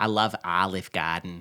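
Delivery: botched, low Southern accent attempt. Retelling how a woman with a heavy new zealand accent tried a bad southern accent. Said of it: "her heavy New Zealand accent can't really do a Southern like voice".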